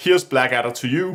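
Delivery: plain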